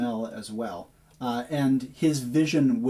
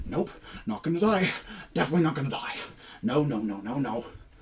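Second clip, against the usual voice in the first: self-directed mumble, muttered under the breath; 2 semitones higher than usual. Narrating to players, a fleeing character scrambles up the stairs, muttering under his breath. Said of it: "instead muttering under his breath".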